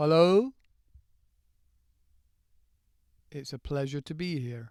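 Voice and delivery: poorly done, slow, drawn-out regal voice. Asking whether you speak slowly, doing a slow King Charles impression. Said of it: "Do you speak slowly, like King Charles?".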